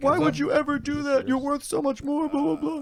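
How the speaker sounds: tearful, very high-pitched crying voice. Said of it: "at her knees crying".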